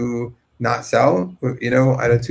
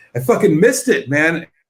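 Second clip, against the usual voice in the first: acted-out yelling in sheer frustration; 4 semitones higher than usual. Reenacting yelling at your wife after missing out on Bitcoin: retelling frustrated yelling. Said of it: "yelling like out of frustration".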